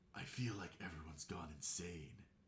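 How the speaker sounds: low, hushed, soft voice. A player voices the character Dis, who has to have Dis's shadow voice. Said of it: "He has to have the shadow voice".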